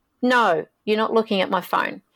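mock-defensive, put-on defensive tone. Retelling what he said when asked about his phone, mock-defensive. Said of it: "he got all defensive saying".

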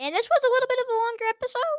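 very high voice, breaking and cracking. Wrapping up a longer episode: voice cracking. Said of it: "My voice just cracked so bad right there".

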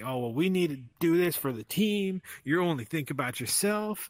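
put-on screaming, ranting, scolding voice. Retelling a phone call from the boss during vacation, imitating the boss screaming. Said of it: "Absolutely screaming at me".

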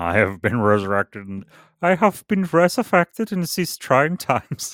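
loud put-on Austrian accent. Speaker pretends to be Carl Jung, in a put-on Austrian accent. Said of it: "I was going for Austrian".

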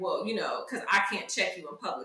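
snide, mocking, sarcastic tone. Quoting what a man said later, the speaker is retelling a sarcastic remark. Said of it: "he was being sarcastic and was like".

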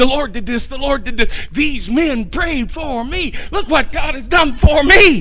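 mock bursting, overjoyed, excited, pitched high. Acting out the healed man jumping up and down: imitating someone all excited. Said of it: "Jumping up and down, all excited".

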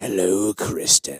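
creepy, menacing night-terror demon voice. Prompted to do the voice, speaking as the night-terror demon. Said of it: "You could do the voice".

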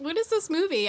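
puzzled, confused tone. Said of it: "And you're like".

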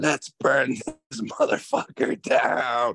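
mild, high-pitched shout. Speaker retells screaming to everyone at a party: retelling a full-lung scream. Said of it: "I just scream at the top of my lungs".

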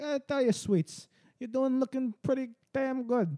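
creepy mob boss voice. Playing the creepy New York old man James says he sounds like, Godfather voice. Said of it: "The fucking Godfather voice".

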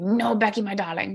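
put-on thick, heavy German accent. Retelling what her grandpa said on the phone before her flight, thick German accent. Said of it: "In his like thick German accent".

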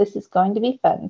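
ordinary delivery

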